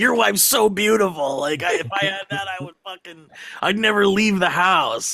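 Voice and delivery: high, manic, screaming rant. Retelling a comedy scene where a character screams at a guy: imitating Connor O'Malley screaming. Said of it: "he just starts screaming at the guy".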